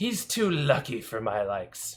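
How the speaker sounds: put-on voice of an old crone. Narrating a scene, a woman addresses the listener in an old crone voice. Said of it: "this like old crone".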